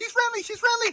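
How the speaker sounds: all-out screaming yell, very high, top of lungs. A player's character warns the party that the elf is friendly, yelling at top of lungs. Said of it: "I'm yelling at the top of my lungs".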